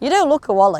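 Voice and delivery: loud, openly sarcastic tone. Telling the other speaker they don't look silly: sarcastic. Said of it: "That's so sarcastic".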